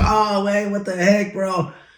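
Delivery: amused, laughing, high-pitched and drawn out. Retelling a reaction to a long wait in line, imitating someone laughing while talking. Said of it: "he laughs".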